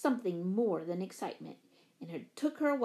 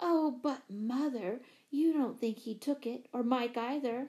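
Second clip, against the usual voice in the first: usual speaking voice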